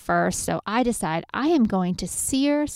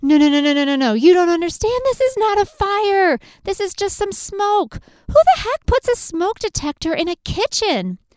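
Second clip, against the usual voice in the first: high-pitched screaming; 10 semitones higher, 6 dB louder than usual. Retelling the smoke alarm going off while cooking, retelling own screaming. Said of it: "And I start screaming".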